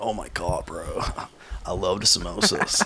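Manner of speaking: put-on surfer-dude accent, laid-back bro talk. Imitating people who come up praising the food, in a put-on surfer-dude voice. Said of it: "I sound like a surfer".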